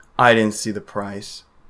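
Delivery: depressed. Answering whether there was any talk of price: depressed. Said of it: "Why'd you say it, like, so depressed?".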